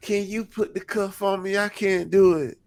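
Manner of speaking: put-on sobbing, pitched very high, pleading. Retelling a contestant's plea from the floor: imitating someone crying. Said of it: "She sitting on the floor crying".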